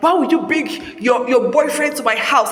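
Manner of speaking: ordinary talk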